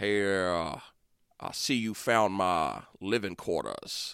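low, commanding southern drawl. Brainstorming a villain voice, trying out the big boss's line: low southern drawl. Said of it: "like a low southern drawl for like the big boss".

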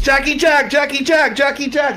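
shrill, thrilled, very high excited shriek. Retelling how the club owner greets jack on seeing him: retelling an excited scream. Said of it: "he screams".

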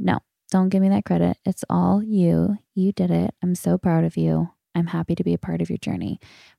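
ordinary talk, nothing marked

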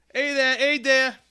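very high, squeaky street-newsboy style voice.

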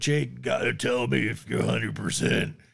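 rough, creaky, gruff voice. Acting out the coach checking on Taylor's knees at spring training, in a Coach Brown voice. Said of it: "my first attempt at that voice".

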